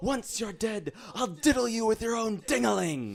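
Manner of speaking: very high, shrill, booming top-of-the-lungs yell. Player's character addressing a miscreant during a fight, yelling at top of lungs. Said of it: "I'm going to yell at the top of my lungs".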